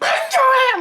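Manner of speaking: high, loud yell at full voice. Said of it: "I was screaming".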